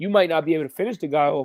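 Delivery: ordinary talk, nothing marked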